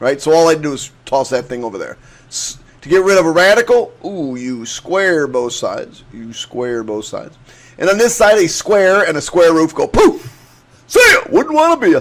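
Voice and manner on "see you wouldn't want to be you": very high, shrill, rushed shrieking scream. Explaining how to square both sides of an equation, screaming. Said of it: "Sorry for screaming at you".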